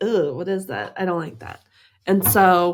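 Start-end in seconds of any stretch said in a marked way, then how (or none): none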